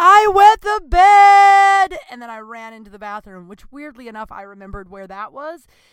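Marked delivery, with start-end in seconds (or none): 0.0-2.0 acted tearful wail, very high, very loud, slow, drawn-out. Retelling bursting into tears and yelling at him: imitating a tearful yell. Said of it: "burst into tears and yelled".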